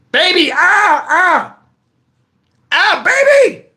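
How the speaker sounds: high, drawn-out pained groans. Retelling lying hurt on the ground calling a woman to come, retelling pained groaning calls. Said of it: "I'm hurt".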